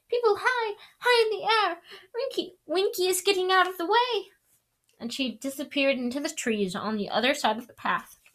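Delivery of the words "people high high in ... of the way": very high, squeaky, distracted voice. Winky struggles to keep running while something holds her back: squeaky, distracted voice. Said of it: "she squeaked distractedly".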